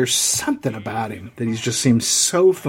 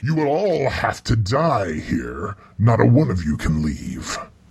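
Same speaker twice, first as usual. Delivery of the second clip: put-on monster character voice; 2 semitones lower than usual. Describing a gray-skinned, sharp-toothed monster, then speaking as it, monster voice. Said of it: "And he's like".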